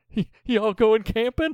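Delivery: play-acted hysterical squeak, stammered, very high. Quoting a movie character's first line to a girl: imitating hysterical delivery. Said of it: "his little hysterical".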